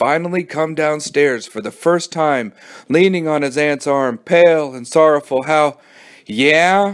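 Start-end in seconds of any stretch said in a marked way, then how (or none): none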